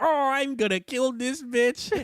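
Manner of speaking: very high silly duck character voice. Retelling a dad doing the bit his girl asks for again, Psycho Duck voice. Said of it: "do Psycho Duck again".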